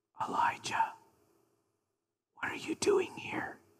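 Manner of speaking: gentle, soft, small, barely-there whisper. Storyteller voices a small voice calling out to a man, small whisper. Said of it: "It was just a whisper".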